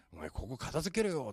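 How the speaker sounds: bossy, arrogant, high-handed domineering tone. Describing couples at home, imitating a husband ordering his wife: mimicking a bossy husband. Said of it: "偉そうに言う旦那さん".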